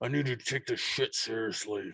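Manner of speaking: deep, gravelly, very hushed, quiet rumble. Retelling how Jake took the speaker aside, imitating Jake's deep gravelly voice. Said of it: "with his deep, gravelly voice".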